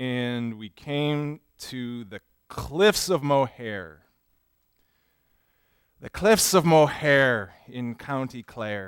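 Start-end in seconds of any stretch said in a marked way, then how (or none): 1.7-8.9 put-on, stage, leprechaun-style Irish accent. A preacher in a sermon recalls backpacking through ireland, in a leprechaun-like irish accent. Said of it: "I don't know why I'm talking like a leprechaun".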